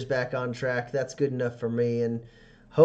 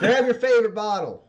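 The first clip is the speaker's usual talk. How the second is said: character shout, much higher and louder; 9 semitones higher, 5 dB louder than usual. Narrating the game, the speaker voices Michelle Green calling Bobby out of the saloon, shouting.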